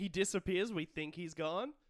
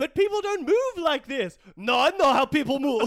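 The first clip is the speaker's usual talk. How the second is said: very loud, high-pitched bad Italian accent; 7 semitones higher, 12 dB louder than usual. Acting out the director's instructions, doing Mark Bonanno's bad Italian accent. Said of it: "I am emulating Mark Bonanno's Italian accent".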